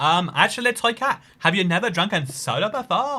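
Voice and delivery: high-pitched, teasing, mocking put-on voice. Speaking to chat and mimicking viewers, put-on mocking voice. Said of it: "that's my mocking you voice".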